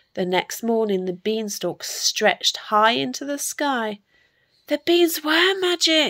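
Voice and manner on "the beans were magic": high, excited, cried-out storybook-style delivery. Seeing the beanstalk stretching into the sky next morning, Jack cries out; crying out. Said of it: "Jack cried".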